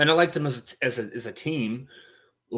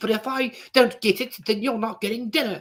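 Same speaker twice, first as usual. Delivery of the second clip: very high-pitched, haughty, snooty put-on British accent; 10 semitones higher, 3 dB louder than usual. Acting out one of a screen couple's demands, in a snooty British accent. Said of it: "you got to do the snooty British accent too".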